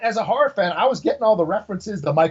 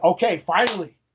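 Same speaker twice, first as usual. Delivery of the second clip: ordinary talk, nothing marked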